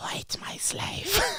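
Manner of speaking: hissing, breathy, snake-like whisper. Reading a story's line aloud with a co-reader, in a snake-like Palpatine voice. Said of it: "a snake-like voice is like".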